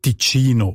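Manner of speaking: Italian Ticino, stress on the second syllable.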